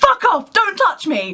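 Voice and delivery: very high, panicked, drawn-out shrieking scream. Recalling a panic attack when a girl put her arms around them: retelling a scream. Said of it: "I literally screamed".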